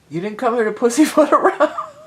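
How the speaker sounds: very loud, high, giggling through the words. Repeating a funny phrase from a tarot reading: laughing while talking. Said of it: "I can't even say it without laughing".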